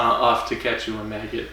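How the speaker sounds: usual speaking voice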